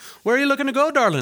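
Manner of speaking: very high stock Irish woman's voice. Retelling what a talking sheep said, in a stereotypical Irish woman accent. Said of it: "a stereotypical small Irish woman came out and was like".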